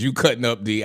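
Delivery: ordinary talk, nothing marked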